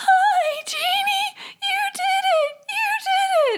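very high, slow, genuinely elated yet worn-out. Retelling first words to a just-born baby: imitating own high-pitched voice. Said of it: "it was a very high-pitched".

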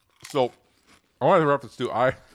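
chewing while speaking, mouth full. Tasting chips on a show, talking with mouth full. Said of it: "I'm still chewing three chips".

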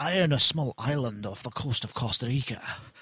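poor, dodgy, fake Scottish accent. Asking a traveler about an imagined person they met, quoting him in a dodgy Scottish accent. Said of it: "in a dodgy Scottish accent".

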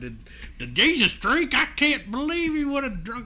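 put-on high, swooping, convincing Texas accent. Retelling a kid's question from a class, perfect Texas accent. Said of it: "in the perfect Texas accent".

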